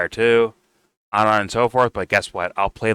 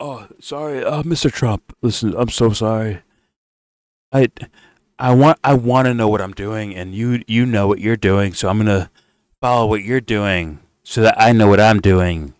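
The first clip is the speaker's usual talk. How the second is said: mocking, apologetic voice laid on thick; 5 dB louder than usual. Imitating Netanyahu apologizing to Trump, mocking Netanyahu impression. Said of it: "Was it Netanyahu saying".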